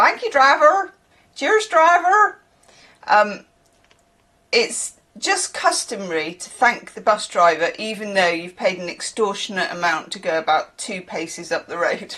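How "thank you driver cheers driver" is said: put-on West Country accent, raised and high. Imitating how people thank the bus driver: imitating local accent. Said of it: "that's how they say it".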